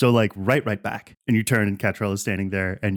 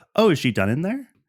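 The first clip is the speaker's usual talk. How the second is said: small, pitched-up, shrunken-down voice; 8 semitones higher than usual. Narrating a scene where a voice speaks behind Mark: Catrell's small voice. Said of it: "you hear a small voice behind you go".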